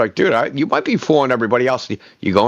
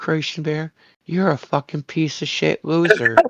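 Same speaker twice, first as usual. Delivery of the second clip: sweet, pleasant, sugary tone; 4 semitones higher, 4 dB quieter than usual. Demonstrating passive-aggressive delivery, said sweetly. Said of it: "As long as I say it nice".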